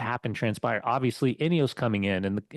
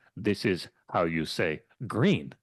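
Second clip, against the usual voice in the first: put-on Dutch-accented English, lower pitch; 5 semitones lower than usual. A podcast host mimics a famous football interview, in Steve McClaren's Dutch accent. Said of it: "The freaky deaky Dutch of Steve McLaren".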